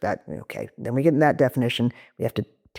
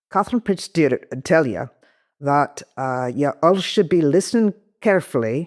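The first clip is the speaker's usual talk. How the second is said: attempted Scottish brogue. Urged by the host to do accents, the speaker tries a Scottish accent. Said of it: "that Scottish one's a bit hard for you".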